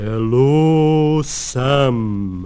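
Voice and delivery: loud, booming, drawn-out call. Adrift after a liner passed, the narrator calls out to sam, booming. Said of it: "I boomed".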